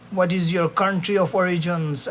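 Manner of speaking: normal talking voice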